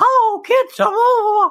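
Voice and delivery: squeaky, very high-pitched voice. Show how you would go up to kids and greet them in a Mickey Mouse voice. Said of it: "doing like a Mickey voice".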